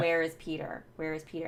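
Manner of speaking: ordinary talk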